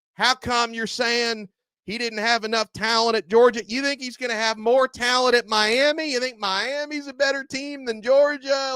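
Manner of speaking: put-on very high-pitched Georgia accent. Imitating Georgia fans going after a commentator online: Georgia fan accent. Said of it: "I'm trying to do the accent?".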